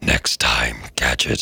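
sinister cartoon villain voice, dropped very low. Repeating a cartoon villain's line, in a Dr. Claw voice. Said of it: "I do a bang-on impression of his arch nemesis, Dr. Claw".

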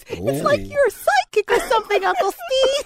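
put-on talking like a baby, babyish voice. Telling an uncle he seems psychic, in baby talk. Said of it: "keep using that baby talk".

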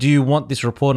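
plain

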